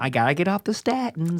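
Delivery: put-on high-pitched voice of a little old lady. Playing along in a joking bit, speaking in an old lady voice. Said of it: "You sound like an old lady".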